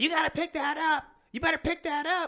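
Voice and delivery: very high, very loud, shrill, shrieked screaming. Speaker retelling his old lady neighbor coming outside at him: retelling a neighbor's screaming. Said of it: "she comes outside screaming".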